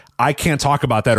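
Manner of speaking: ordinary talk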